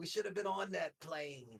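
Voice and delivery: put-on soft New Jersey accent. Quoting Allie during the conversation, imitating Allie's New Jersey accent. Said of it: "your imitation of Allie's impeccable New Jersey accent".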